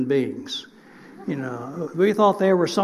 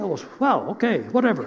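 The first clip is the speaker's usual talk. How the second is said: ordinary delivery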